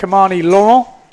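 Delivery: put-on French accent. Introducing who is here for the super final, in best French accent. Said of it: "That's my best French accent".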